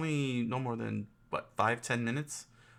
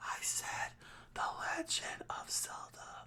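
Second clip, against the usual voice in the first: hushed whisper, quieter. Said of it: "Why are you whispering?".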